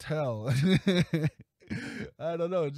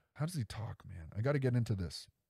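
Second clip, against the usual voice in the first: normal talking voice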